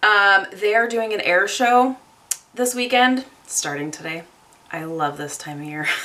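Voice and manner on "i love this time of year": dry sarcasm, lower and quieter. Talking about an air show starting today near home: sarcastic. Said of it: "Being totally sarcastic".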